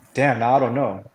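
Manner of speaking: ordinary talk, nothing marked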